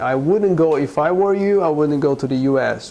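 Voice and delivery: ordinary talk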